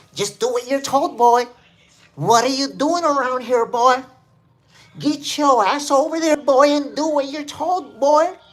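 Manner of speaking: loud, bossy put-on cop voice. Acting out orders being given, the speaker adds a put-on accent. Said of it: "Let's put the accent behind it".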